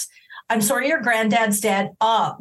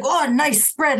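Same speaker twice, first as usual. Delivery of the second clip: put-on sloppy, aggressive, pushy, pitched-up drunk voice; 5 semitones higher than usual. Acting out a drunk at a wake consoling family: drunk and aggressive. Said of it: "In a drunk and aggressive way".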